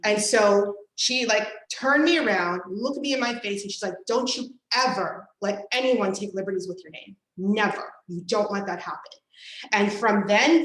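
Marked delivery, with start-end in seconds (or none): 4.1-9.0 put-on very serious voice. Retelling a warning from mom at age six: imitating mom getting real serious. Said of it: "they get real serious".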